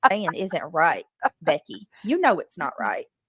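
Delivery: scolding tone with swooping pitch. Confronting another speaker in an argument: scolding like a mom. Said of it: "Like you're scolding me like your mom?".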